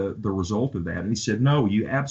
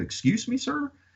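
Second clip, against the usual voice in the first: put-on snickering, laughing voice, pitched higher; 4 dB quieter than usual. Retelling his own reply to a Marine: imitating a snickering reply. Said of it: "I just kinda laughed and went".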